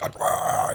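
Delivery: whispered, silly voice. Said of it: "that's why I'm doing a stupid voice".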